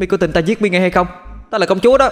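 doll voice yelling in rage. Narrating a story where a slapped doll shouts back, as an angry shouting doll. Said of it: "giận dữ mà hét lên".

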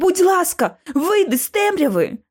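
insistent, pressing voice. The narrator begs a figure hidden in the darkness to come out, insisting. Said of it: "наполягала я".

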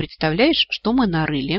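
ordinary talk

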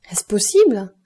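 mock astonishment. Shown the baroness's horses at his carriage, the count speaks in feigned astonishment. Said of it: "en jouant l'étonnement".

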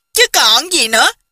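speaking through loud, hearty laughter. Narrator reads a character answering another's question, laughing loudly. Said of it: "Chu Bá Thông hô hô cười rộ nói".

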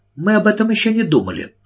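cold, frosty tone. Carrie answers Miss Price's question about what they will do today, coldly. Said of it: "холодно ответила она".

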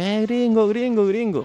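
mock children's yelling. Retelling how a bunch of kids on a hill yelled at the speaker: imitating kids shouting. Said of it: "un montón de chavalitos gritando".

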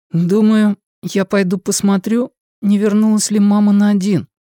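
almost inaudible mumble, under the breath. Answering someone who demanded he speak louder, barely audible. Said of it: "едва слышно ответил Лео".

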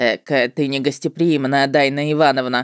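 mocking, derisive tone. A narrator reading a stranger's remark to the first-person narrator; mocking tone. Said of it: "насмешливо отметил чужак".

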